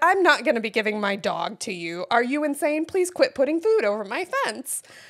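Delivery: play-acted delivery, laughing through the words. Retelling what was said to a woman putting food over the fence: reenacting a laughing delivery. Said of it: "I actually did say it in a very laughing way".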